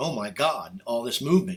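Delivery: ordinary talk, nothing marked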